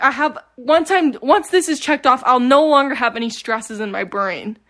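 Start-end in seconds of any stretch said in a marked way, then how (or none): none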